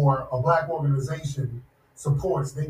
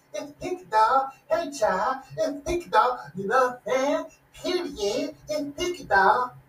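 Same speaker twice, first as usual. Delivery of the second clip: high, mocking, sassy put-on voice, pitch raised; 9 semitones higher than usual. Mocking how someone talks, imitating Pinky Doll. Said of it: "that Pinky Doll chick does that".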